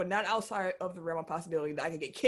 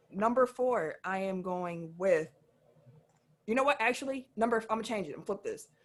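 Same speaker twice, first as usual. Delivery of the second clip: ordinary talk, nothing marked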